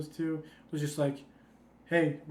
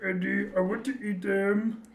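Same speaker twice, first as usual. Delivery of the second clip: put-on creature voice, higher and louder; 4 semitones higher, 4 dB louder than usual. Quoting a movie character talking to Eddie: Venom voice. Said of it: "Venom talking to Eddie and be like".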